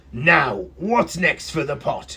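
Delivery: growled like a terrible beast. Reading a story aloud, voicing the terrible beast in a growling beast voice. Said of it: "growled the beast".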